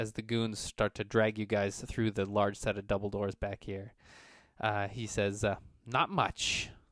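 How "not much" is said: muttered out of the corner of the mouth. Voicing a boss answering as goons drag the players away: muttered out of the corner of the mouth. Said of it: "he says out of the corner of his mouth".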